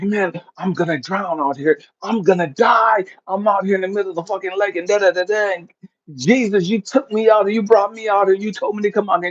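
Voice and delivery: acted panicky man voice. Retelling a story of a man in a cracking boat: imitating a panicking man. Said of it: "the dude starts panicking".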